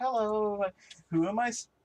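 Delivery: jokingly jovial tone, high and slow. Describing Lydic taking a phone handed to him, imitating Lydic jokingly jovial. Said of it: "a little jokingly jovial".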